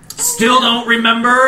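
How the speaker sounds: declaiming, proclaiming delivery with drawn-out no. From the top of a wall, a man calls down to a man below, bellowing. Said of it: "he bellows from the top of the wall".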